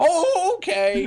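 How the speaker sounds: put-on very high-pitched little-old-lady grandma voice. Retelling a phone call from the grandma, imitating the grandma's voice. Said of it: "that impersonation".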